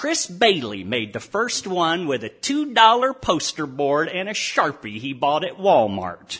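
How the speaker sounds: loud, down-home, folksy Texas drawl, storyteller style. Reporter tells how the Everybody love everybody signs began; folksy Texas drawl. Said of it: "narrated by a reporter with a folksy Texas drawl".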